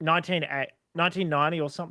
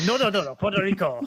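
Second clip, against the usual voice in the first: fake, put-on Japanese accent; 4 semitones higher, 4 dB louder than usual. Mocking another speaker's joke: imitating a put-on Japanese accent. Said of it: "you sound like you're putting on a Japanese accent".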